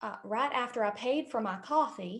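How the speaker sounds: put-on southern US accent. Telling a story while a partner calls out accents to switch into: southern accent. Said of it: "Add a southern accent".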